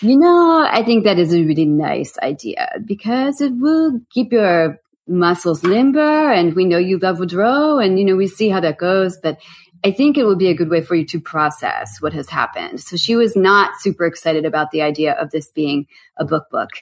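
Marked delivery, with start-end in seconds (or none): 0.0-12.8 put-on French accent with wavering pitch. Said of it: "she hates it when I do her accent".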